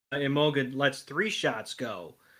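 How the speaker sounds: ordinary delivery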